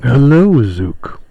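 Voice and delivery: dignified, lordly, noble character voice. Voicing a character who greets another character, in a noble voice. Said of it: "He's got a very noble voice to him".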